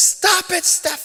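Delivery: hysterical, shrill, very high-pitched yelling. Retelling a fight with a brother while mom tries to stop it, imitating mom's hysterical yelling. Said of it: "She's yelling".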